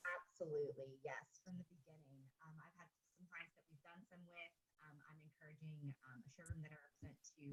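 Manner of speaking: faint, far too soft, barely audible.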